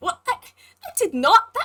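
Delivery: very slow, high, flustered, panicked stammer. Voicing a hooded toon confronted by a character: acted panic. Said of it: "she starts looking a little more panicked".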